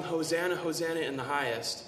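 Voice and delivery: ordinary delivery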